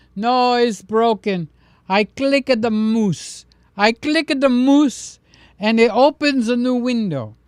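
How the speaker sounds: put-on Greek accent. Imitating a retired greek priest on a phone call, in a full greek accent. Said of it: "So we got the full Greek accent".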